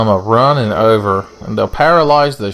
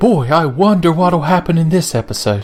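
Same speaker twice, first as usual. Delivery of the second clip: silly, high, put-on character voice; 7 semitones higher than usual. Starting a gameplay episode, remembering to do the stupid voice. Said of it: "I forgot to do the stupid voice".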